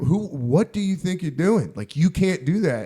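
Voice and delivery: acted furious outburst with wildly swooping pitch. Retelling how the landlady scolded a roommate: imitating someone losing her temper. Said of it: "And she lost it".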